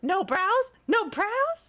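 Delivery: very high-pitched cartoon voice. Chatting about beauty trends, saying it in SpongeBob voice. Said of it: "In SpongeBob voice".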